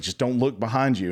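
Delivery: play-acted frantic, alarmed, panicked tone. Retelling a warning given on the lift ride up: imitating someone freaking out. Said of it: "freaking out".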